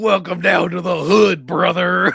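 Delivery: very loud, rough, slow, drawn-out, high bellowing. Quoting a clip from a show: Hulk Hogan voice. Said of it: "the fucking Hulk Hogan clip of him going like".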